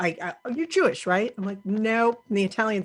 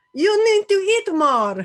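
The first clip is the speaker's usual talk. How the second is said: put-on, drawn-out, over-the-top Greek accent, high and slow; 11 semitones higher, 6 dB louder than usual. Asked by family to do a greek accent, the speaker answers in a mock greek accent. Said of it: "do a Greek accent".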